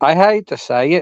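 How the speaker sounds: slow, put-on British accent. Admitting a music opinion, slipping into a put-on British accent. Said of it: "I don't know where the accent came from".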